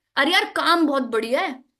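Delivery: acted sure, trusting, confident, self-assured voice. Contrasting a doubtful-sounding voice with another voice, in a confident, sure tone. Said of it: "trust लग रहा है, confidence लग रहा है".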